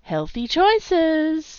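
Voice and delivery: playful, high, sing-song teasing tone. Narrator reading Camilla answering Chase, teasing. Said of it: "teased Camilla".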